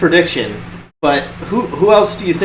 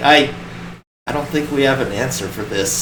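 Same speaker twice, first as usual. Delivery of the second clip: put-on voice of total defeat and sadness; 3 semitones lower, 4 dB quieter than usual. Act out a man's words after six games in a row, imitating someone totally defeated and sad. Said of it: "the total defeat and sadness in his voice".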